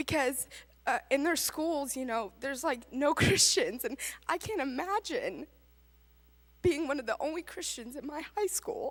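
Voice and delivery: tearful voice giving way, crying through words. Telling about students from church who encouraged her faith, crying while speaking. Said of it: "I can't talk without crying".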